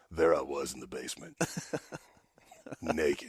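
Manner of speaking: very quiet, deep, soft, swooping seductive voice.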